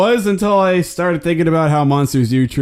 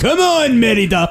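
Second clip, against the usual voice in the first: put-on failed Scottish accent, much higher pitch; 9 semitones higher than usual. Quoting a movie father calling to his daughter, failed scottish accent. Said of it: "That was not Scottish".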